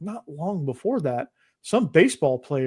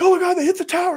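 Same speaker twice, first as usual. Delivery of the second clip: put-on shrill, panicked, very high, loud frantic screaming; 5 dB louder than usual. Retelling a classmate running through school with the news, imitating frantic screaming.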